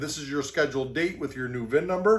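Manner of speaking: ordinary talk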